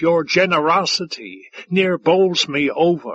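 ordinary delivery

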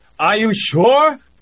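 very high, chattering through teeth. The Austrian responds to Jamie's shout, teeth chattering audibly. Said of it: "The Austrian's teeth were chattering audibly".

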